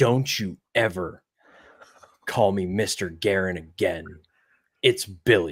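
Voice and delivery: dead serious, slow. Retelling meeting Billy Guerin who turned dead serious: imitating a dead serious warning. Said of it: "dead serious look on his face".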